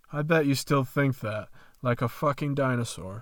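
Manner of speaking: ordinary delivery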